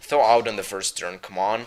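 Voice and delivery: normal talking voice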